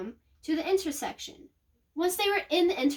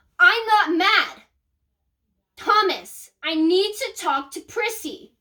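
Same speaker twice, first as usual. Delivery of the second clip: put-on yelling, louder; 2 semitones higher, 8 dB louder than usual. Retelling a mom arguing on the phone: imitating a mom yelling. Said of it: "unless you stop yelling".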